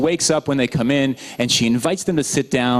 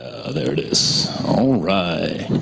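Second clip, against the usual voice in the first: FM radio DJ announcer voice. Speaker remarks on their own voice after yelling over music all night, FM radio DJ voice. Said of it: "my F M radio D J voice there".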